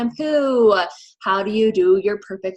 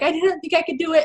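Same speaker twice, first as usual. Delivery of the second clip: acted-out crying, higher pitch; 8 semitones higher than usual. Recalling her first postpartum workout, retelling her own crying. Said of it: "just like crying".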